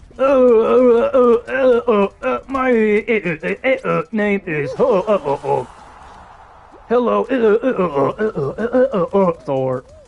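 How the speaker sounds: high, slow, stuttering, glitching robotic auto-tune voice. Imitating a movie character's auto-tune voice while ranting: Hulk auto-tune voice. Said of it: "his auto-tune voice in Thor Ragnarok".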